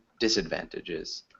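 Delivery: stress on first syllable dis in disadvantages. Giving pronunciation feedback, stress on dis in disadvantages. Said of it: "So we'd emphasize the first syllable".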